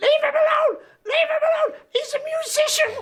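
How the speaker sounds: mock screaming, shrill, loud, at very high pitch. Retelling a knife threat, doing Linda screaming at the man. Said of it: "She's screaming at him".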